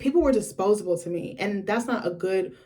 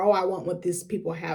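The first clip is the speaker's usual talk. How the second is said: normal talking voice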